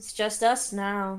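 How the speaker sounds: calling out loudly. In a role-play, the character calls across the room, raising their voice. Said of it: "I'm calling over the room, raising my voice".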